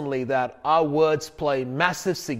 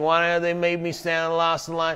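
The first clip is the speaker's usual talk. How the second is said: put-on nasal, twangy voice. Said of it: "that whole nasal".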